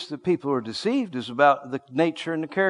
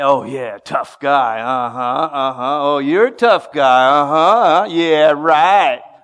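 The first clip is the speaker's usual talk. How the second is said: loud, drawn-out, jeering, derisive mockery; 7 dB louder than usual. Showing the congregation what mocking someone sounds like: mocking tone. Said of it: "I'm mocking him".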